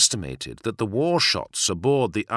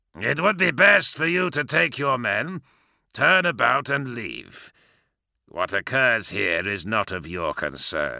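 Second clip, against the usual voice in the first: sneered, sneering tone. Grulgor addresses Garrow as Garrow arrives with the others; sneering. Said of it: "he sneered".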